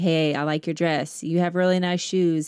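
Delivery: mock flat monotone delivery. Retelling a man's campus compliment experiment, imitating a monotone compliment. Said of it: "And one was pretty monotone".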